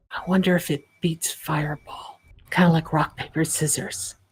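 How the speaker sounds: hushed, whispered aside. Voicing a character replying to Demalagus across a table: whispering back. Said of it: "She's just gonna whisper back".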